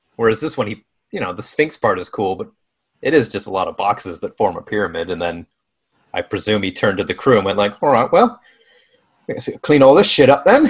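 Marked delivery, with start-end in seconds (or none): 7.8-10.7 put-on loud, unconvincing Liverpool (Scouse) accent. Imagine what he said when he turned to the crew before going off, in a failed scouse accent. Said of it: "that accent's not working. He's a scouser".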